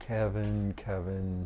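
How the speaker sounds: soft, chiding repeat of the name.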